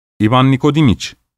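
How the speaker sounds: ordinary delivery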